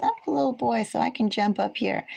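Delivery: sweet, cute, small, high-pitched kitty voice. Speaking as a big cat who thinks he is small: voicing the cat, cute little voice. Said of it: "He says".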